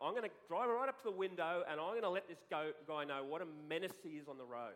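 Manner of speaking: ordinary talk, nothing marked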